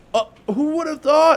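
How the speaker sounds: high, loud, feigned innocent surprise. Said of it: "we say".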